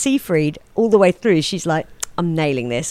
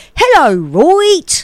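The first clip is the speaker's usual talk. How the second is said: terrible fake British accent; 11 semitones higher, 5 dB louder than usual. Mocking podcasters who attempt British voices, a terrible fake British accent. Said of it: "when they do an English accent on a British accent on podcasts and stuff, ... they're always terrible, and they always they're always like".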